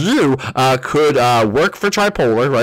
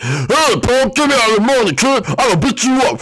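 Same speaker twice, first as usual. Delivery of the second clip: shrill, very high, angry and menacing voice; 10 semitones higher than usual. Showing a hat that changes emotions, this one is the mad hat: angry voice. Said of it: "so that's the mad hat".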